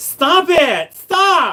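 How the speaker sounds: campy, giggling, flamboyant voice, very high and loud.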